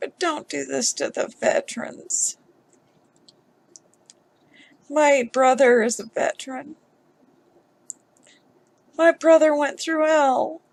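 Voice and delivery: tearing up, voice choking with tears. Speaker pleading on behalf of veterans like their brother, tearing up. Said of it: "I'm tearing up right now".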